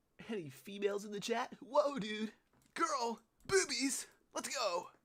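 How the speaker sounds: high, loud, cheering cartoon character voice. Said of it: "I did Sonic voice just then".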